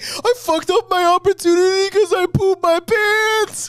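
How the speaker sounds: sobbing, very high and loud crying wail. Retelling a late-night phone call to mom: imitating own past crying. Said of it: "And I'm crying 'cause I'm like".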